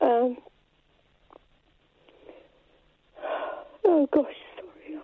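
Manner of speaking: trembling voice. Talking about her grown-up children, shaking voice. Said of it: "I'm literally shaking".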